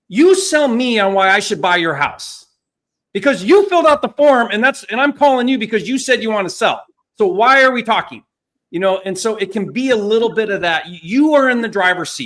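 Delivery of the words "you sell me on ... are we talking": blunt, direct, authoritative, raised salesman voice. Demonstrate the tone RJ has when calling someone who wants to sell a house, imitating RJ's tone. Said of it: "this is the tone that R J has".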